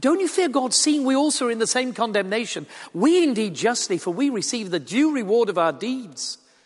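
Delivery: loud high shout. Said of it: "Still shouting across to his friend".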